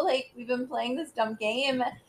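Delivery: ordinary delivery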